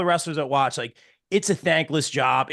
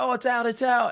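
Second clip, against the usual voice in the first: mock screaming, much higher and faster; 9 semitones higher than usual. Speaker retells his partner's reaction to big news, imitating her screaming. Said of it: "she's screaming".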